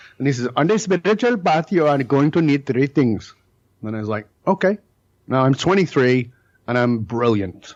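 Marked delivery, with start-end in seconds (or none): 0.6-3.4 put-on heavy Indian accent. Quoting a man you were studying with at twenty-three, in a very strong indian accent. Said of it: "he had a very strong Indian accent".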